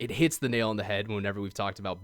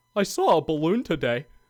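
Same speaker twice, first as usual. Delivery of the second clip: high, loud, simple, friendly golden retriever voice; 8 semitones higher, 7 dB louder than usual. Retelling the same reel, voicing the Golden Retriever: imitating a dog voiceover. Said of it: "a Golden Retriever ... and he's like".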